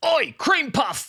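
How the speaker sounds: very high, shrill, loud English bully jeer. Imagining what bullies in England would have shouted: English teenage bully impression. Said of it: "My bullies to me if I grew up in England".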